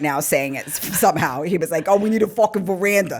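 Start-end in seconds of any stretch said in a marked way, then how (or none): 1.9-3.2 extra dumb, dopey voice. Retelling what a husband said, imitating his dumb way of talking. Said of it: "my husband sound even dumber than I sound".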